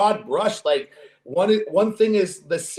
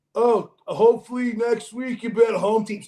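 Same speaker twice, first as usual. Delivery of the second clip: slow, smug, know-it-all taunting tone; 4 semitones higher than usual. Retelling what a friend said to him after losses: imitating a friend's smug advice. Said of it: "I love your impression of me".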